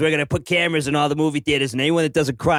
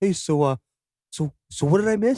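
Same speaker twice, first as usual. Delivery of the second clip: soft, quiet, courteous and polite; 3 semitones higher than usual. Acting out an imagined moment tapping a crying stranger's shoulder: imitating a quiet polite question. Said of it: "quietly and politely were like".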